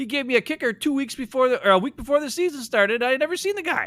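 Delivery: high-pitched, whiny voice.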